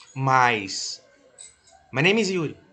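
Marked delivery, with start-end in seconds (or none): 1.9-2.5 rattled off very fast, higher pitch. Testing whether listeners understand spoken english: a sentence said very fast. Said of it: "Eu falei bem rápido".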